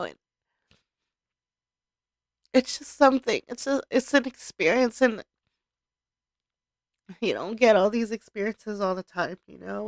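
choked-up voice catching with emotion. Recalling saying thank-yous at the end of a trip, getting choked up. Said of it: "just like I'm getting choked up right now".

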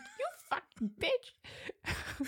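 playful, joking, mock-teasing whisper. Joking about being insulted while made into schnitzel: mock insulting someone. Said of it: "Insult me".

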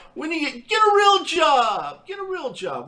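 put-on high swooping yell, job drawn out. Speaker retells what a man yelled at him: retelling a man's yell. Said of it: "he was yelling".

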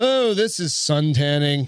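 slow, easygoing put-on British accent. Voicing an elephant in a photo as it suns itself: british accent. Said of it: "I think British. I always go to that".

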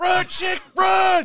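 very high, very loud, shrill scream. Speaker imitates someone at a scary movie screaming at the audience. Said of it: "where that person screams at the audience".

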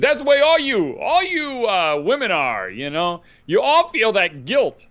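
put-on New England accent. Retelling what one of the brothers told a woman, new england accent. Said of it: "he has that kind of New England accent".

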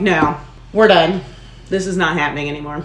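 ordinary talk

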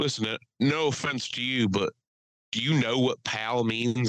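put-on Southern drawl. Retelling an argument, the speaker quotes a man from south jersey: imitating a southern drawl. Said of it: "with an incredibly Southern drawl".

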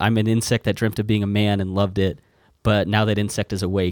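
usual speaking voice

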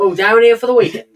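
proper, loud, high West Country farmer accent. Trading regional accents, the speaker offers a proper West Country farmer's accent. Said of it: "Proper farmer's accent".

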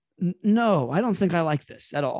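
usual speaking voice

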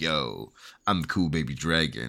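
voice dropped way down and kept quiet. Picturing a card scene, voicing a tiny cool baby dragon: cool baby dragon voice. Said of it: "a tiny little cool baby with, like, glasses".

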